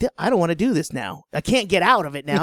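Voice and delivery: ordinary delivery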